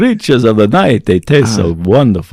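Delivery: put-on horror-movie vampire voice. Show the co-hosts how the renamed Tasty Bites segment would be introduced, in a vampire voice. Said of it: "We're going to do it with a vampire voice".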